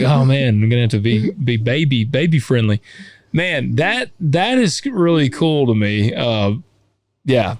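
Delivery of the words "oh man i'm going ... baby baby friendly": ordinary delivery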